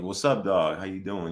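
slightly street-style voice. Speaker recalls how they used to greet people, sounding a bit street. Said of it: "like just a bit street".

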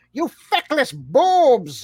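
high, swooping villain voice, "boobs" stretched out. Comparing two cartoon villains' insults, the speaker slips into a Skeletor voice. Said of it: "Skeletor is just like".

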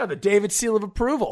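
heavy sarcasm, ironic approval, sing-song and high-pitched. Granting approval after another speaker agrees, sounding sarcastic. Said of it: "that came off way more sarcastic than I intended".

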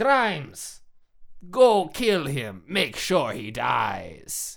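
swooping, sing-song spy film villain voice. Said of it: "that's my impression of".

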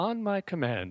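machine-like, sing-song, automated computer announcer voice. Describing how she surprisingly sounded on first hearing: automated computer voice. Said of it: "almost like a computer talking automated thing".

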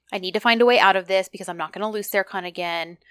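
ordinary talk

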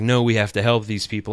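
ordinary delivery

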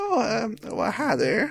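put-on tiny, high, swooping elderly gnome woman voice. A very elderly gnome woman peeking over a counter greets visitors: elderly gnome woman voice. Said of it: "you hear this old lady voice".

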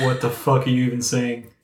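ordinary talk, nothing marked

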